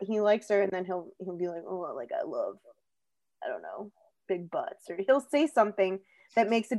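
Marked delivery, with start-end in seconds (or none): 1.7-4.9 very deep, low, murmured, hushed douchey guy voice. Describing how men in movies talk about women, acting one out: douchey man voice. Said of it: "I hate your douchey man voice".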